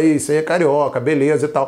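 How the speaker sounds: usual speaking voice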